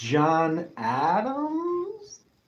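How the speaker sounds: question-like rising pitch lift ending on Adams. Naming the second US president with a tone: rising question tone on Adams. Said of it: "If I say it like that, it's with a question mark at the end".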